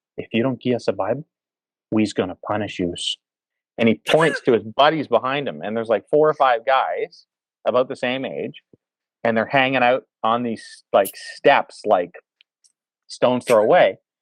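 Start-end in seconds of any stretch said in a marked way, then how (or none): 0.2-3.0 deadly earnest, dead-serious delivery. Retelling being threatened over a Bible, the speaker quotes him, retelling a dead-serious line. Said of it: "he's dead serious".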